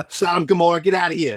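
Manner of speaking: put-on New Jersey accent. Retelling a scripture story, voicing God, in a Jersey guido accent. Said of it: "God is definitely the Guido from Jersey".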